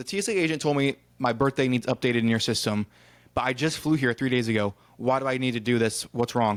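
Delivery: ordinary talk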